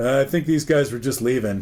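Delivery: normal talking voice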